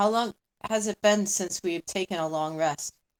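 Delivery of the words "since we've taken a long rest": ordinary talk, nothing marked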